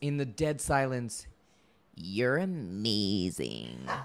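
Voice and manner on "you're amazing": creaky vocal fry, much lower and quieter. Retelling what somebody said in dead silence before the cast, in vocal fry. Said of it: "it was right on the vocal fry".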